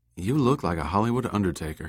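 plain

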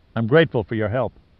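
plain reading voice

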